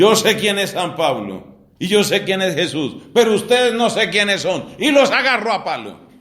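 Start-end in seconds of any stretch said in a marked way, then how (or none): 0.0-4.7 roaring, demonic, possessed man's voice. Retelling how men confronted a possessed man, voicing him in a roaring demon voice. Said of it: "les dice con voz de rugido".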